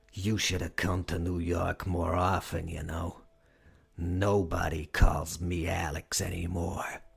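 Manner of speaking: snarling vampire voice. Reading a novel, the vampire Alex answers the begging manager, Alex's snarling vampire voice. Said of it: "The vampire snarled a reply".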